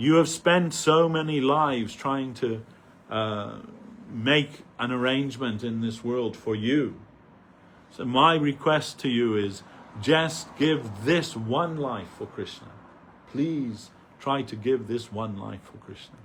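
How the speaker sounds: ordinary talk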